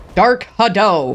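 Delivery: exaggerated put-on voice. Trying to make the voice sound whiter, say it in a whitest-man voice. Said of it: "make sure to use your whitest man voice".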